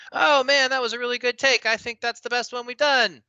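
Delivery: very high-pitched, loud yelling. Describing actors after the director calls cut, imitating actors yelling. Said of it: "why are you yelling now in real life".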